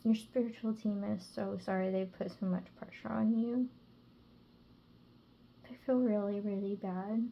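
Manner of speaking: close to tears. Giving a reading about a spiritual team's apology: emotional voice, close to tears. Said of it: "my voice is really emotional 'cause I really just wanna burst in tears".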